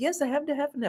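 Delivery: put-on soft, calm, unruffled and composed. Retelling how a man answered a friend's coffee question, imitating a calm reply. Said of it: "he was so calm and he was so collected".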